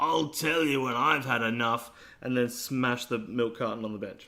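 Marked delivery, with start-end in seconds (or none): 0.0-1.9 put-on drunken slurring. Acting out a drunk cartoon boy in an imagined scene: Bart slurring drunk. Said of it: "Bart will be slurring".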